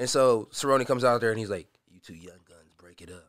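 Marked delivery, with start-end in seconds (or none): 1.9-3.3 very soft, cool-headed and unbothered delivery. Retelling a fighter breaking up a scuffle: imitating Cerrone's voice. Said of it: "you did his voice so well".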